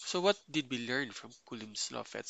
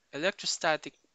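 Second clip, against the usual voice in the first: electrostatic stressed, higher and louder. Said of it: "I want to emphasize the word electrostatic force".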